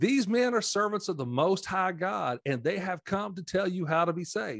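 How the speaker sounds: put-on scornful, sarcastic, mocking shout. Retelling a Bible passage, quoting a slave girl following two men, retelling a mocking shout. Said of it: "She kept shouting".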